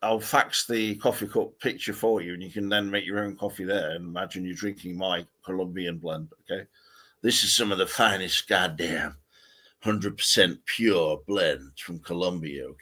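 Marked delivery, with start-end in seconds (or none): 6.4-12.7 put-on American accent. Talking to the other speaker about faxing a coffee picture, in an American accent. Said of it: "can I not talk in American accent then?".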